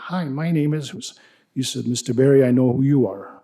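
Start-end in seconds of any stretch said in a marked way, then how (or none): 0.0-0.9 nerdy-sounding voice. Retelling knocking on the listener's door in 2016; sounding like a nerd. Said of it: "I started sounding like a nerd".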